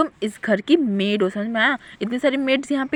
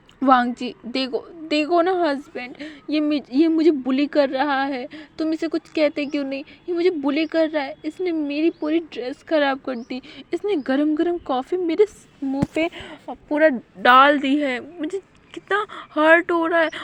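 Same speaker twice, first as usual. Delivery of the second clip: play-acted, high, tearful crying through sobs; 5 semitones higher than usual. Narrating a story, voicing Lucy speaking to her husband, crying while complaining. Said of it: "रोते हुए बोलती है".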